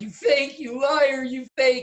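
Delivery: acted, very high, loud, crying, accusing tone. Actor recalling calling another character a fake in a scene, retelling a tearful accusation. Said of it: "and I'm crying".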